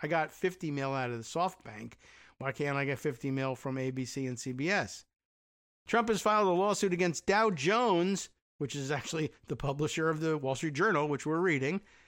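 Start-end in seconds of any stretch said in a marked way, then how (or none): none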